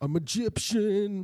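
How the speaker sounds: very high voice, squeezed and pushed way up. Doing an impression after another speaker asks to hear it: Luca Ferro impression. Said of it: "Do you like my Luca Ferro impression?".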